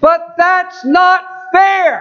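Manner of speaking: play-acted, loud, very high, explosive outburst. Speaker retells how Sandy exploded at what he said, retelling her loud outburst. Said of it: "And with a loud voice".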